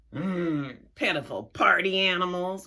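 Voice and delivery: grouchy, grumbling troll voice. Reading a story aloud, the troll's line at the others' silliness, grumbling troll. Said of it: "grumbled the troll".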